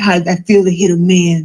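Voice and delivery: ordinary talk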